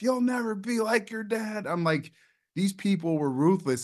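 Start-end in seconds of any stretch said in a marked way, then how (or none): 0.0-1.7 put-on screamed, drunken, high-pitched heckler's yell. Retelling what a drunk guy screamed at you in front of a crowd, imitating a drunk heckler yelling. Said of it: "just yelling at me, screaming at me".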